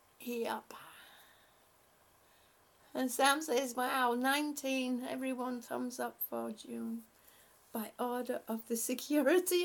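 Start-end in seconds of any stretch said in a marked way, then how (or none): none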